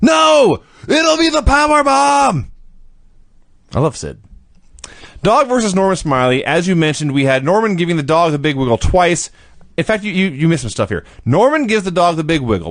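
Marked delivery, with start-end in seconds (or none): 0.0-2.5 play-acted sudden scream, high, very slowly stretched. Retelling a wrestler who whispers, then stops and screams: imitating Sid screaming. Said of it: "he stops and just screams".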